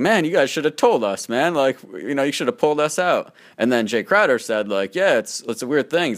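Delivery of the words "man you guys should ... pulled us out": playful, light-hearted, put-on jokey ribbing tone. Retelling what someone said jokingly to another man, retelling a joking remark. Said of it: "he said jokingly to Danny Ainge".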